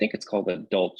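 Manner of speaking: plain reading voice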